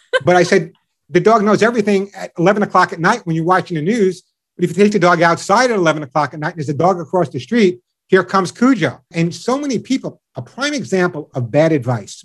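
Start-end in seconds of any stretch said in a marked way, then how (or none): none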